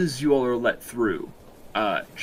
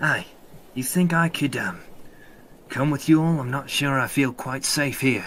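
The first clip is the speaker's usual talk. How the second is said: hushed whisper; 2 semitones higher than usual. An unseen character speaks from behind the player character, whispering. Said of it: "you hear a voice uh, whispering behind you".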